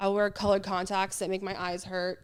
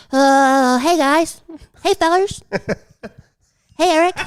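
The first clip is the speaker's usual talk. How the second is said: high, very loud, hesitant delivery; 8 semitones higher, 13 dB louder than usual. Speaker asked to do Butters one more time, Butters voice. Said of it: "One more time. Butters".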